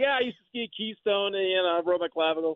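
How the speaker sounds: put-on New York accent. Retelling what a pirate on the ship said: imitating a new york accent. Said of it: "he had a New York accent".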